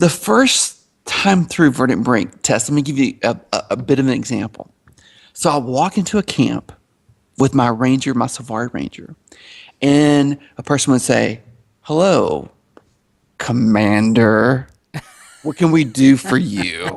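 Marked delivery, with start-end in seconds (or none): 11.8-17.0 really sarcastic, slow, crappy tone. Gamer retells a person in a camp greeting his Ranger, mock-sarcastic greeting. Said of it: "like real sarcastic".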